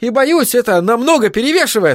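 high-pitched yell. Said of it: "заорал Айзек".

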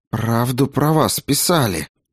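venomous, hissed, sibilant delivery. Narrator reads Klara's line as she dodges the walking corpse, hissed. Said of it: "прошипела она".

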